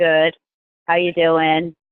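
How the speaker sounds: bland, listless, flat, low, no-energy voice. Showing the typical answer people give to how you doing, no energy. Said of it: "No energy".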